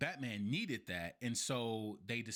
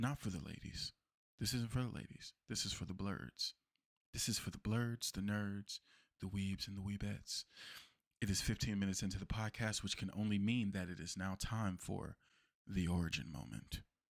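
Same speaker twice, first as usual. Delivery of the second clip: put-on silky, smooth-talking voice; 2 semitones lower than usual. Fifteen minutes into the podcast, the host breaks out his smooth voice. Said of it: "I'm breaking out the smooth voice".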